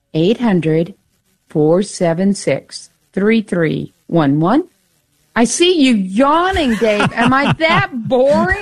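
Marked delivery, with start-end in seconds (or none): 0.1-4.6 deliberately slow, much lower pitch. Repeating a phone number a second time for listeners, say it slowly. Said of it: "I'm going to say it slow".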